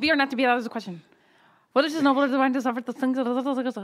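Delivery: reading at top speed, rapid and rattled-off. Taking a turn to read a passage aloud to the others, reading as fast as possible. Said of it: "I'm going to read it as fast as I can".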